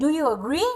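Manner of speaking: rising tone on the word "agree". English lesson in Hindi on rising and falling tones: rising tone on agree. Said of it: "डू यू क्या है आपकी falling टोन, agree क्या है rising टोन।".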